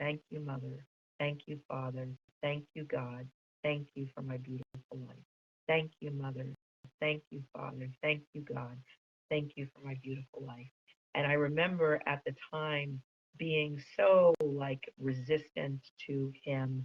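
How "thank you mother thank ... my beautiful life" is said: soothing, gentle, soft, calm repeated phrases. Retelling a man repeating phrases for the speaker, who was in pain: imitating a calm gentle voice. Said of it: "he kept repeating in this calm and gentle voice".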